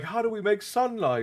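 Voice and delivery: high, frantic, panicky voice. Recounting a Harry Potter scene in the Devil's Snare, imitating panicked Hermione. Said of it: "Hermione is panicking in the Devil's Snare".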